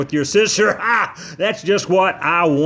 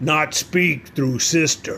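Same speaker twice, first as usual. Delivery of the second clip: very deep, low, rumbling voice; 3 dB quieter than usual. Narrator reads Scraunch addressing the speaker after Missy tries to speak, deep rumbling voice. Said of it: "he said in a real deep, rumbling voice".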